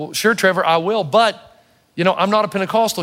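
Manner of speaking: usual speaking voice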